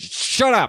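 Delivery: mock-grumpy snap. Retelling how he wakes up grumpy in the boat, mock-grumpy snap. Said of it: "wakes up grumpy".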